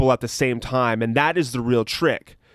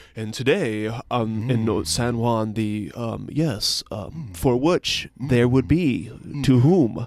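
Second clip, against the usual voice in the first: mocking, serious, grave newscaster voice parody; 2 semitones lower than usual. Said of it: "talk in a really serious manner".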